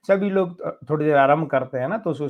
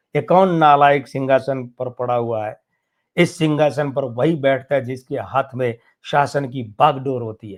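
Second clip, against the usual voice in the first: ordinary delivery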